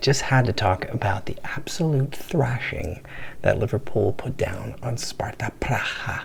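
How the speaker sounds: soft, quiet, hushed whisper. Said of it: "I'm going to be speaking quietly".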